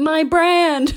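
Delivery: loud, high-pitched, theatrical dramatic cry. Retelling a contact lens commercial where a man holds a box: imitating a dramatic cry. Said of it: "he dramatically goes".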